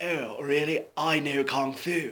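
slow, airy hippie drawl with lots of air. Showing how an impression of Keanu Reeves sounds: Keanu Reeves voice. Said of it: "Keanu's more like a hippie kind of".

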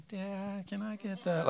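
put-on sugary, soft, high little-kid voice. A father imitates his toddler daughter asking for something; imitating a toddler's sweet voice. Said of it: "She like already knows the sweet voice".

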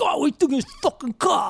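put-on very high, thick, laid-on New York accent. Describing an actor in a movie who talks with a thick New York accent. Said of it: "with a thick New York accent".

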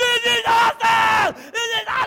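shrill, booming, very loud thrilled yelling. Recalling going fast and sideways with a microphone on, retelling own excited yelling. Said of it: "the whole time I'm yelling".

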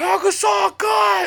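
very high-pitched, shrill, raspy, rough scream. Retelling how a player screamed at another during a game, retelling a loud scream. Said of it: "He just screamed to him".

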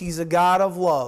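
ordinary delivery

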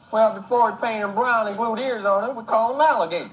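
decent put-on Southern country accent. Playing a country-bumpkin rancher answering a question about his dog, southern accent. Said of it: "that's not a bad southern accent".

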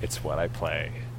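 low, quiet, defeated sigh.

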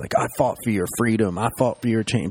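put-on screaming and yelling. Retelling being yelled at by people after leaving the stage: retelling a scream. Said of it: "the people were screaming at me".

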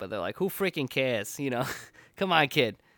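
poor, unconvincing put-on Boston accent. Imitating Northeast people reacting to music: bad Bostonian accent. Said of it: "I'll do my bad Bostonian".

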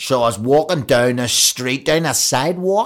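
put-on loud Northern Irish accent, drifting and sliding off. Imitating a golfer whose northern irish accent has drifted american. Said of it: "I once did that impression to him".

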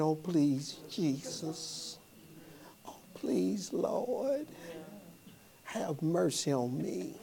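pleading, dragged out very slowly. Describing going to God wrongly, imitating someone begging. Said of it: "you go to him begging".

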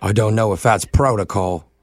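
British English accent throughout. Talking to a caller during a prank phone call: English accent. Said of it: "talk to me in that sexy accent".

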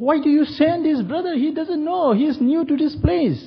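mock shrieking, very high-pitched and shrill. Retelling how the pastor's wife reacted: imitating someone screaming.

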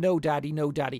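put-on high childlike scream. Retelling a child's car scene from a film: imitating Damien screaming. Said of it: "and he's screaming".

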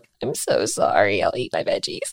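put-on tearful little-boy voice, on the edge of tears. Speaker retells Max apologizing at dinner after being yelled at, imitating Max tearing up. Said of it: "his little chin started quivering and his little eyes welled".

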